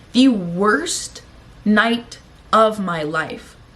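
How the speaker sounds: slow, heavy stress on worst and night. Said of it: "are you guys hearing that".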